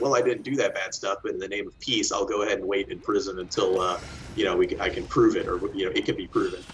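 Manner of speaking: ordinary delivery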